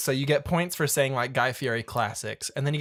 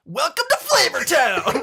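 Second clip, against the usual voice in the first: very high, drawn-out, loud put-on TV chef shout; 13 semitones higher, 6 dB louder than usual. Imagining a cooking game's voice line, shouting like Guy Fieri. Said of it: "yell everything, kind of like Guy Fieri does".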